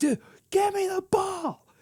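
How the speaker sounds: play-acted raging, blown-up furious outburst, very high pitch. Retelling a player losing it over the ball: imitating a furious outburst. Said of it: "Colin Sexton just goes nuclear".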